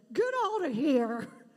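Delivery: booming, very loud outburst. Retelling a lady in the audience refusing to pet Cairo, in a very loud voice. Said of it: "in a very loud voice said".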